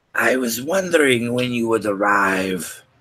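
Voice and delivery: rasping, scratchy-throated, hoarse voice. As the players sneak around, a voice greets them in a very soft, raspy voice. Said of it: "in a very soft, raspy voice".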